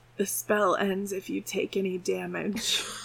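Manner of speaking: secretive, soft, hushed half-whisper. Voicing a character who leans over to tell a player a secret: half-whispering. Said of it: "he whispers".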